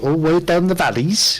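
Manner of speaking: patchy put-on Welsh accent. Speaker admits a shaky Welsh accent, then demonstrates an attempted Welsh accent. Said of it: "I could do a Welsh accent".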